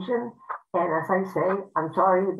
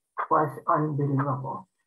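ordinary talk, nothing marked

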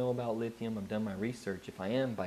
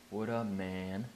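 put-on drunk voice, slower pace. Retelling people who pulled up next to the speaker, imitating drunk people. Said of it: "they're all drunk and they're sitting there like".

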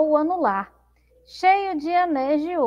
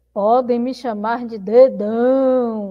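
thick, deep, slow villain voice; 5 semitones lower, 3 dB louder than usual. Storyteller voices the thumb, who has declared himself the villain, even deeper villain voice. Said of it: "E engrossando mais a voz".

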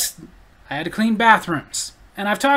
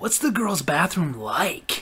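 really creepy, prying tone, acted out; 3 semitones lower, 6 dB quieter than usual. Retelling what Mark asked them, the speaker imitates Mark, creepy-like. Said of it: "like really creepy-like".

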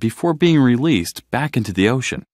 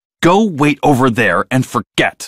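snapping sharply, lashing out; 4 dB louder than usual. Marlin, while comforting Nemo, turns on Dory; lashing out. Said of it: "he lashed out at Dory".

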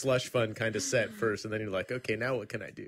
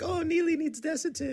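put-on Spanish accent, pitched very high. Speaker quoting their mom on a grumpy day, in a Spanish accent. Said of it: "in her little Spanish accent".

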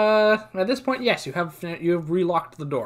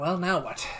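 hushed half-whispered aside in character; 5 dB quieter than usual. Half-whispering to a companion while waiting at an opened door: half-whispering in character. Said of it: "I whisper to you".

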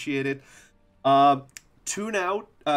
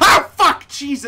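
piercing, sudden, full-volume, very high shriek; 12 semitones higher, 12 dB louder than usual. Playing a game as an enemy closes in, a sudden scream. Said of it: "I'm sorry for the scream".

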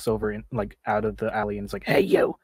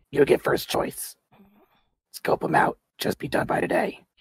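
dry, rasping voice; 4 semitones higher than usual. Voicing a character giving the players a job in a role-play scene; raspy voice. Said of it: "She rasps out".

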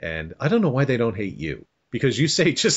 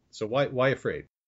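plain

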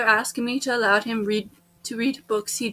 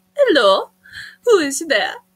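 animated, loud, swooping put-on French accent; 4 semitones higher, 6 dB louder than usual. Speaker tries the best French they can do: put-on French accent. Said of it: "That's the best French I can do".

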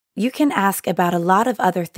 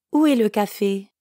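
ordinary delivery

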